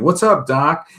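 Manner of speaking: voice like a cartoon rabbit. Retelling a cartoon where a rabbit greets a frightened man: Bugs Bunny voice. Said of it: "And it's Bugs Bunny again".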